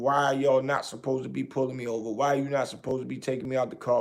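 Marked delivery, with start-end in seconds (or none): none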